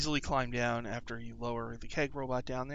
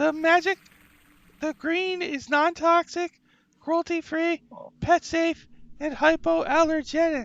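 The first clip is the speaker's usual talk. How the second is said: very high, loud, squeaky rat voice; 6 dB louder than usual. Voicing a rat who answers why it is green: rat voice. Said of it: "So I need a rat voice".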